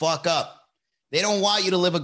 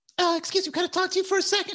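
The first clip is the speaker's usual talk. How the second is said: worst-ever very high put-on voice. Imitating Hernando writing someone up at work: worst Hernando impression. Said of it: "worst Hernando fucking impression".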